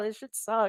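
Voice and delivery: soft, tearful speech through crying. Talking about watching their team's season, crying while talking. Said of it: "I'm crying right now".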